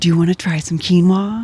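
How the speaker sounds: imitated excited voice. Retelling offering food samples to the first customer: imitating own excited past self. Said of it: "I'm all excited".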